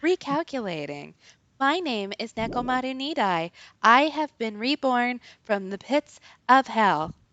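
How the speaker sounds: mock, put-on voice-assistant voice.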